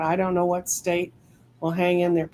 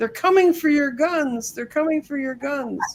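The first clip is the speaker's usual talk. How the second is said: mock alarmed, high-pitched panicked shrieking; 8 semitones higher than usual. Describing a cartoon elephant running with its funds: mock-screaming as the elephant. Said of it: "the elephant's screaming".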